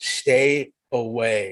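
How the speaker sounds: deep gravelly voice with "away" stretched out. Quoting what they told the speaker, in a low, gravelly voice. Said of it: "they're telling me this in a low, gravelly voice".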